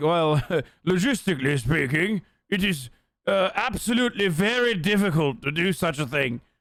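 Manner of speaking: put-on slightly British accent, formal lawyerly tone. Acting out how someone debated the logistics, slightly british voice. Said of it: "He just sounds a little British".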